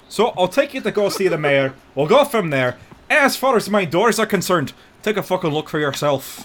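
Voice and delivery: put-on Scottish accent, very high, shrill and very loud. Speaker voicing a character to another person, Scottish accent. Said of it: "Where's the fucking Scottish accent? It's right here".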